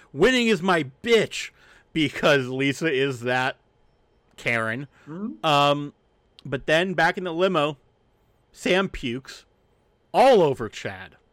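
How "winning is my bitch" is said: mock high, competitive, taunting yell. Recapping a woman getting too competitive while driving: retelling a yell. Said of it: "And she yells".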